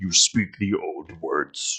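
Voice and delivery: very slow grunting delivery. Voicing a creature who grunts at a player, grunting while speaking. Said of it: "grunting at you".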